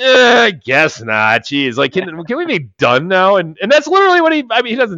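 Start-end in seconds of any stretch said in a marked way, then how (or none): 0.0-1.4 mock-whiny, much higher, louder, slower. Describing how a character delivers his line, the speaker imitates a whiny tone. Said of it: "in kind of like a whiny tone".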